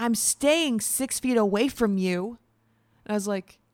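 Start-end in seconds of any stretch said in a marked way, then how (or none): 0.0-2.4 very slow, stretched-out, drawn-out yell. Retelling what a lady in the hallway said: imitating a lady yelling. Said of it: "a lady yelled at me in the hallway".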